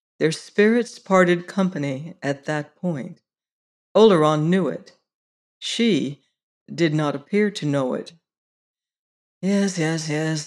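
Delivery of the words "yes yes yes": soft, slightly tired, weary tone. Oleron answers her, a little weary. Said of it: "he said a little wearily".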